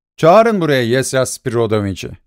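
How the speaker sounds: ordinary delivery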